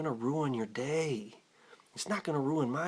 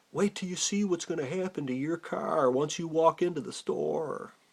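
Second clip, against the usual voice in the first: put-on yelling, called out; 3 semitones higher than usual. Retelling a threat shouted across a parking lot: imitating someone yelling. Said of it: "he yells out".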